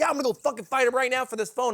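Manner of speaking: play-acted, angry, worked-up, freaking-out rant. Retelling how a man threatened a fight over his phone, imitating a guy freaking out. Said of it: "He's like freaking out on like us".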